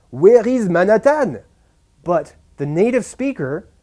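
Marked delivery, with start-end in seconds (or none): 0.2-1.4 high, raised put-on French accent. Explaining pronunciation, quoting a French person asking for directions: imitating French-accented English. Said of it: "the French person could say".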